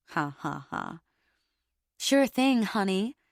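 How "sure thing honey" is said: phony, put-on American accent. Reading a story aloud, a character agrees to a ride: phony American accent. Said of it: "he says in a phony American accent".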